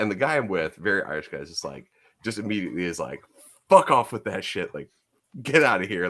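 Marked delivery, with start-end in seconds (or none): 3.7-6.1 put-on angry, cursing telling-off. Retelling a friend driving off a man asking for money: imitating a friend cursing someone out. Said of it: "starts cursing at him".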